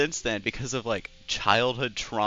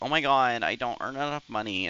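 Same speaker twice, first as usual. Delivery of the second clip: put-on pick-me girl character voice. Mocking how a pick-me girl complains about money: imitating a pick-me girl. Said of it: "that's my pick-me girl impersonation".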